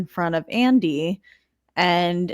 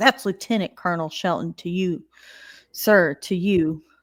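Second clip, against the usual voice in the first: plain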